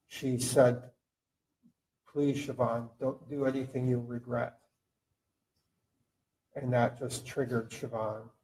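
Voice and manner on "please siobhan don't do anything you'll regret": acted calm voice masking fear. Recounting the wife's plea to Siobhan just before the shooting, retelling a calm, fearful plea. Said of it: "calm, but ... fear in her voice".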